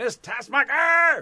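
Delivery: shrill loud yell. Recalling a favorite film moment: imitating Gene Hackman yelling. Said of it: "Gene Hackman s-, yelling".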